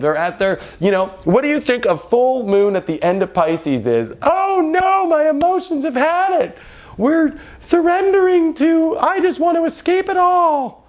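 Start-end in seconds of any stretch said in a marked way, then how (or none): 4.2-10.7 very high, slow, drawn-out despairing voice. Speaker discussing the Pisces full moon, voicing people at their wit's end. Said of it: "And I do that in that voice".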